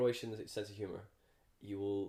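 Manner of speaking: usual speaking voice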